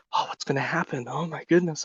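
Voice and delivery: very hushed, anticipating whispers, like a crowd. Narrating an onlooking crowd waiting in anticipation, crowd whispering. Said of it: "there's a few whispers of like".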